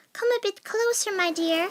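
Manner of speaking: high-pitched put-on old woman voice. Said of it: "in a high-pitched voice".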